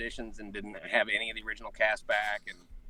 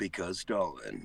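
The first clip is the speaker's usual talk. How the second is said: grandiose, grand, epic announcer-style delivery; 4 semitones lower than usual. Performing a requested line for a friend: epic voice. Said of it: "say that in the epic voice for me".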